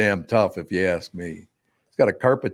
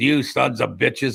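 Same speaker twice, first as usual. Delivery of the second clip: rough, creaky rasp of an aging teacher; 4 semitones higher than usual. Retelling how a shop teacher, Mister Rock, addressed the class: imitating the teacher's voice. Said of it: "he had a voice like this".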